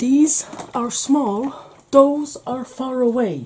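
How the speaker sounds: high-pitched put-on Irish accent. Explaining the camera trick by quoting Father Ted in a bad Irish accent. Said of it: "Worst Irish accent ever".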